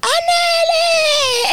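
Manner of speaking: very high, drawn-out calling out.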